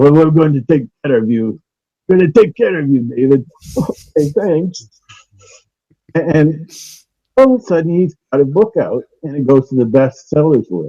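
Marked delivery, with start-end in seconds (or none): 0.0-3.4 quick, fake, put-on Irish accent. Retelling a strange phone call someone made to david: put-on irish accent. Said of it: "in an accent, an Irish accent".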